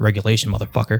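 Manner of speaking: put-on muttering under breath. Retelling one's own reply to that person: imitating own muttering under breath. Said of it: "under my breath".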